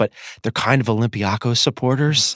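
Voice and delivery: hushed whisper. Host speaking to a guest, hiding a remark from a crowd, whispering. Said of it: "I'm going to whisper this".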